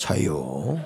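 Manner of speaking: Chungcheong regional dialect of Korean. Retelling how a late church elder answered the room, in broad Chungcheong dialect. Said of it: "아주 전형적인 충청도 사투리로".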